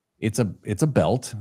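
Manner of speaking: ordinary talk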